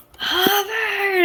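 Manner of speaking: play-acted very high, booming yell. A player shakes a companion by the shoulders to wake him, very loud shout. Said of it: "And I'm so loud trying to wake him".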